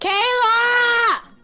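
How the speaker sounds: loud, high shout of a name.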